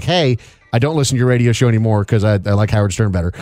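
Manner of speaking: normal talking voice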